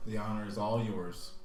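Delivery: heavy, dripping, laid-on-thick sarcastically polite tone. Answering someone who will ride at the front of the caravan to see King Ord, heavy with sarcasm. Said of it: "Heavy with like sarcasm".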